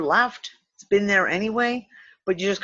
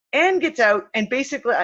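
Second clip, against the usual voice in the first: ordinary delivery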